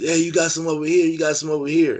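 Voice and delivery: loud high-pitched yelling. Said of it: "he yelled to the police".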